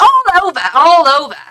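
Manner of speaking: put-on Cockney accent. Quoting a woman from England answering the speaker's question, in a Cockney accent. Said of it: "She had a really Cockney accent".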